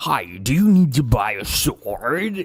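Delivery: crazy, swooping, over-the-top dubbed-anime American English. Speaker mocking how American characters sound in anime, doing the crazy anime English voice. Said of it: "the craziest English voice you've ever heard".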